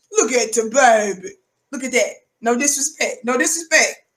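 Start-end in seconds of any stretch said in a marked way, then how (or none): 0.1-1.3 mock pet-talk voice, lower. Mocking a man on Fox News with the voice for the family dog. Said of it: "That's how I be talking to the little family dog".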